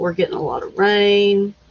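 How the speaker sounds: ordinary talk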